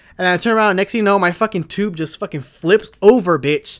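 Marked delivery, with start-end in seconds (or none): none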